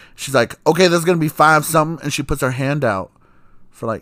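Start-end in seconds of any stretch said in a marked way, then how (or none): 0.7-2.0 mock loud, curt, snippy clerk voice with attitude. Retelling a donut shop clerk giving the total: imitating a clerk's attitude. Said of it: "but she did it with all this attitude".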